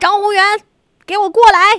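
loud high-pitched shout. Describing how he yells the speaker's full name to call them over: imitating him yelling full name. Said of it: "一般会吼全名还是吼小名？".

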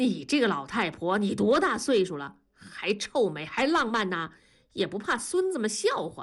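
usual speaking voice

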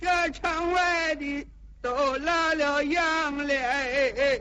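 high, slow, weepy and tearful. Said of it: "哭声哭韵的了".

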